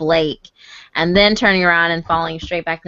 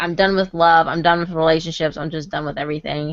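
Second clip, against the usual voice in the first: ordinary talk, nothing marked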